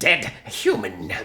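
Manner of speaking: loud, crude goblin speech with broken words. Voicing a goblin threatening a player: broken goblin speech. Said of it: "It says in broken goblin".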